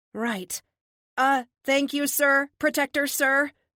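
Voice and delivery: high, halting, stumbling, stammering delivery. Reading a story, the narrator thanks the man who saved him, stammering. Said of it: "I stammer".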